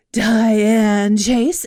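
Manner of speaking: breathy put-on voice. Retelling how a coworker said her name on air: imitating Diane's breathy voice. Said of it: "She was very breathy".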